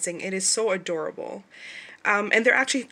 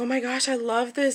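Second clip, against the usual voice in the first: mock gushing, happy, delighted exclamation; 4 semitones higher than usual. Retelling her first reaction to watching the students: retelling own happy reaction. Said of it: "I was so happy".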